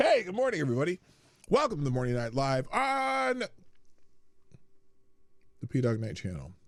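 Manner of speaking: speaking with mouth full of food. Opening a morning show to viewers while eating toast, mouth full. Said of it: "I got a mouthful of toast".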